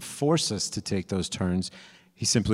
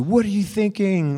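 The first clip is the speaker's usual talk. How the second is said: mock loud yelling, much higher; 11 semitones higher, 5 dB louder than usual. Describing taking a wrong turn while driving, imitating a navigation voice: mock yelling. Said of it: "this loud voice yelling at you".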